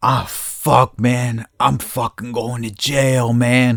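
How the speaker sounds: put-on stressed, panicked, pleading voice. Retelling what a driver at a crash scene said: imitating a stressed man. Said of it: "he looks fucking stressed".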